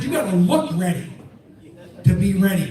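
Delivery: ordinary delivery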